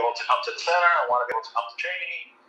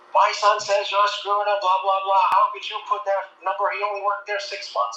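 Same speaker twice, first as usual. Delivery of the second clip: put-on, high-pitched, angry screaming; 8 semitones higher than usual. Retelling a phone call where a caller's mother screams: imitating someone screaming. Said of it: "His mother starts screaming at me".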